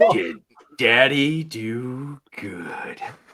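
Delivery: slowed right down, very deep, with do drawn out. Player asked to repeat the question slower: said slower. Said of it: "Say it slower".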